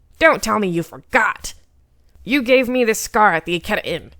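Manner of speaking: heated, furious, angry. Heisuke reacts to the other man's honest confusion, angry. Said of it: "that only made Heisuke angrier".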